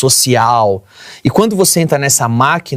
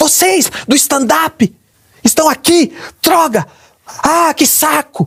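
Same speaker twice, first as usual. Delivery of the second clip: very high, dragged-out, mock tantrum yell; 13 semitones higher than usual. Retelling how an actress came to the dressing room: imitating an actress yelling. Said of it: "começou a gritar".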